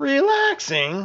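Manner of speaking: very high, exclaiming voice. A boy answers a question about what took so long: exclaimed. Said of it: "Stavius exclaimed".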